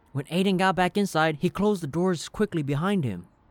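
ordinary delivery

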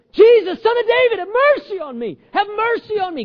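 very high, loud pleading cry. Retelling a blind man calling to Jesus: imitating a man crying out. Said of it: "Keeps crying out".

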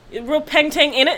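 put-on British accent. A host addresses London listeners in a mock British accent. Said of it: "I love British accents".

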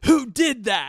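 very high-pitched, very loud, shrill accusing tone. Retelling how she turned around and asked: imitating her accusing question. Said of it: "looks at me and just goes".

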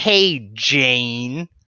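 put-on American accent. Imitating how Woods would say the line instead: Woods' American voice. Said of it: "'cause he's American".

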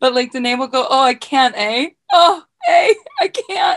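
very drawn-out, slow, swooping Greek Canadian lilt. Telling what you love about how Danae talks, imitating Danae's Greek Canadian accent. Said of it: "she sounds so Greek".

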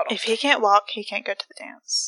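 mock-deadpan delivery. Acting out a movie line after failing to keep a straight face, mock-deadpan delivery. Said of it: "Perfect face".

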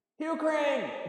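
piercing, shrill, very high yell. Retelling a film scene where a character calls out a name: imitating someone yelling. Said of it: "She just starts yelling it out".

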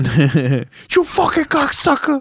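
spat out, pitched way up very high. Asked to do the bit again while joking about Mario, doing the Joe Pesci impression. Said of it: "Just do the Joe Pesci one again".

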